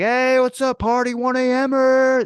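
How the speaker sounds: put-on very high, very slow drunk screaming whoop. Retelling drunk kids shouting at people on the elliptical: imitating drunk kids screaming. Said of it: "and just screaming like that".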